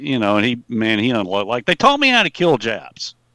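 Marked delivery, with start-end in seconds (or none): 1.6-3.1 put-on really loud, high, swooping voice. Retelling how dad answered a tittering girl: imitating someone saying it loudly. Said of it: "he said it really loud".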